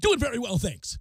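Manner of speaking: loud, high announcer voice. Retelling what the announcer said during a break: Kevin Winter announcer voice. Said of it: "He was all in".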